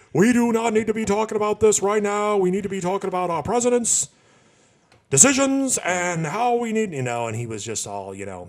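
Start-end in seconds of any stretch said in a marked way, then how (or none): 0.1-6.9 loud, high-pitched, really angry rant. Retelling an interview answer with a bad Bernie Sanders impression. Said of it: "I'm doing a bad impression of him".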